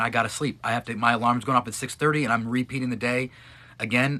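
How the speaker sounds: usual speaking voice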